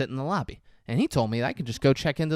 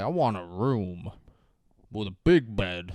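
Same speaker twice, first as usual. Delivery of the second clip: slowed-down, dragged-out tape playback voice; 6 semitones lower than usual. Retelling a voice recorder played slow on a phone call: imitating a slowed-down tape voice. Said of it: "holds his thumb down on the tape so it goes slow".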